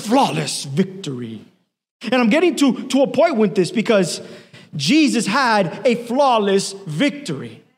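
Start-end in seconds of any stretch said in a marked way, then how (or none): 0.0-1.4 very low, crazy game announcer voice. Speaker explains a Mortal Kombat saying to listeners, in the Mortal Kombat announcer voice. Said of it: "This crazy voice will come out and the guy says".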